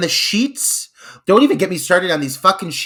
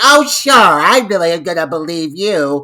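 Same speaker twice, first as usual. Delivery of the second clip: loud, put-on, disbelieving, sarcastic complaining; 3 semitones higher, 6 dB louder than usual. Retelling a movie scene, imitating Joni complaining sarcastically. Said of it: "Instantly, like, bitching, you know, complaining".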